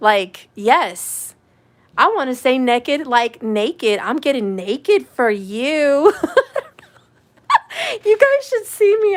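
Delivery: very high, laughing through words. Talking to 'you guys', the speaker jokes along, cracking themself up. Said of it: "I'm cracking myself up over here".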